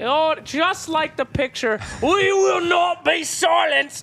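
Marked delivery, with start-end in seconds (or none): 2.0-4.0 loud, clearly put-on British accent. Acting out a scene in front of the tanks, the speaker uses a put-on British accent. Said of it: "That's a British accent".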